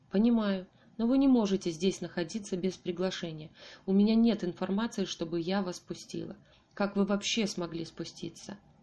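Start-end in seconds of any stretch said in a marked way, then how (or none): none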